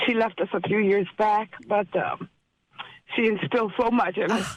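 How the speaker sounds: emotional, teary, close to crying. Speaking of a woman who has passed who raised seven children, teary-eyed. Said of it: "I'm getting a little teary-eyed here".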